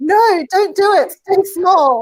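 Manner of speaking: put-on high, stretched, drawn-out screaming. Retelling how a woman's named inner voice of fear screamed: imitating Muriel screaming. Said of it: "Muriel was running around screaming".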